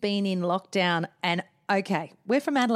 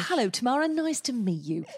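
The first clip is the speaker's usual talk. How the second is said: put-on little posh voice; 4 semitones higher than usual. Speaker describes how Dan greets people, imitating Dan's posh voice. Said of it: "put on his best little voice".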